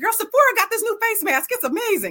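very high gushing voice. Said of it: "I'll be like".

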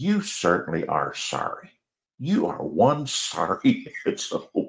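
mock-compassionate voice. Retelling a woman's reply to the speaker's apology, imitating a compassionate voice. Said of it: "in the most compassionate voice said".

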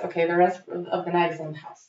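ordinary delivery

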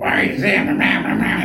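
nagging whining drone like a drill bit. Describing a voice heard in the head while driving, whining like a drill. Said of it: "It was whining like a drill in my fucking head".

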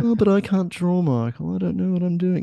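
high, goofy, funny put-on voice. Acting out what people will say to him, in a put-on voice. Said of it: "Is that a better voice?".

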